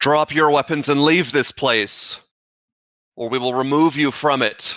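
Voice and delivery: loudest all-out booming shout, voice at absolute limit. A tabletop player voices his character, in the loudest voice he can muster. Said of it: "in the loudest voice he can muster up".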